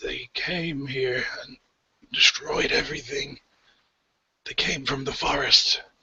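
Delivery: high, croaky, rasping voice. A game master voices a crucified priest answering the players, croaking. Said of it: "the stone doorway that's left of the temple of Amanator, the sun god, and you see that above that is crucified the priest, / and you see that above that is crucified the priest, and he kind of croaks".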